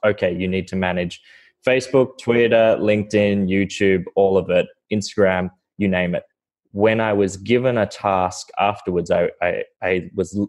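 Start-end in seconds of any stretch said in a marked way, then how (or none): none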